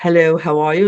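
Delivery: formal, boardroom-style corporate speaking voice. Speaker showing how others expect speakers to talk, demonstrating a corporate speaking voice. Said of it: "this is what corporate speak sounds like".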